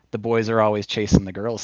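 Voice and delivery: normal talking voice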